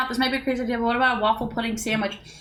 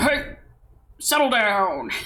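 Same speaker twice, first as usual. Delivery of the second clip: put-on old gym teacher voice; 3 semitones lower than usual. Explaining a joke, imitating an old gym teacher. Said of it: "like an old gym teacher going".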